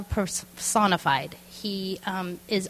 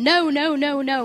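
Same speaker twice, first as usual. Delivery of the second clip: put-on child's high screaming "no," very slow and drawn out; 7 semitones higher, 5 dB louder than usual. Recounting a shot at the doctor's, a parent imitates their daughter screaming no. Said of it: "She's screaming".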